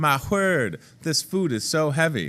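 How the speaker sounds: small put-on southern belle accent. Speak for Lieutenant Bach, struggling with heavy cans of food, Lieutenant Bach as a southern belle. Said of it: "He's like a little southern belle".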